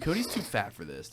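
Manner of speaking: hushed, secretive whisper. Acting out a remark whispered to someone: imitating a whisper. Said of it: "She just whispers to you".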